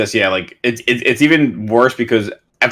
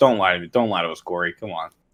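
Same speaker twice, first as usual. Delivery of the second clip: usual speaking voice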